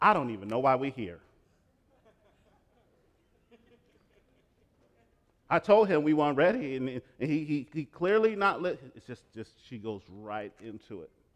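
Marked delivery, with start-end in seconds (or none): 0.0-6.8 sudden, loud, high, unfiltered blurted outburst. Retelling a wife's answer in an interview: imitating a loud blurt. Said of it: "she blurts out very loudly".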